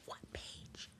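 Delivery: whispered low under the breath, very soft and hushed. Retelling asking a classmate about a book during class: retelling a whisper. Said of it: "So I had to whisper".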